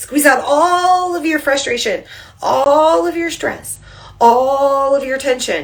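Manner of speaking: tense, squeezing voice. Leading a squeeze-and-release relaxation exercise while squeezing too, in a strained squeezing voice. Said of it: "I'm squeezing so hard you can hear it in my voice".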